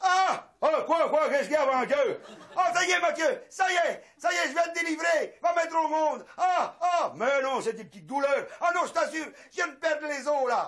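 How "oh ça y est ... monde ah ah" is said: pained yelling cries, pitched high. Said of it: "Arrête de gueuler comme ça".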